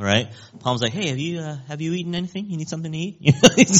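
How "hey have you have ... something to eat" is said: high, soft, super calm voice. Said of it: "Super calm [name]".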